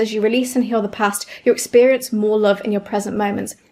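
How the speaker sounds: plain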